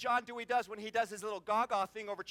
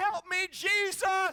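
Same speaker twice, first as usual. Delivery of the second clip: acted, high, loud panicked scream; 9 semitones higher, 6 dB louder than usual. Retelling a skid on an icy highway, the speaker imitates Brenda screaming. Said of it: "she's screaming".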